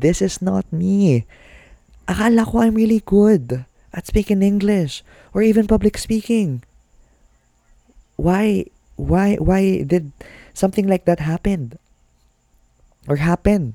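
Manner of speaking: high-pitched, frustrated, distressed voice.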